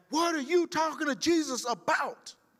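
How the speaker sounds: very high, barked, drill-instructor-style shout. Retelling what he yelled back at her in front of the class, retelling own yell. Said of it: "I yelled back".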